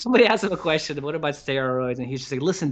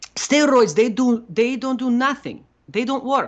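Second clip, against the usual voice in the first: put-on Italian accent, pitched much higher; 10 semitones higher, 3 dB louder than usual. Describing an old seminar video, imitating Franco Colombo's Italian accent. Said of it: "with his like Italian accent".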